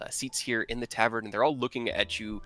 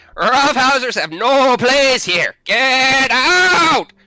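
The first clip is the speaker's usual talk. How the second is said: shrill, very loud, high, furious booming bellow; 19 dB louder than usual. Voicing a satyr at a bar smacking a mug: satyr shouting angrily. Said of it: "And he's just shouting at you guys".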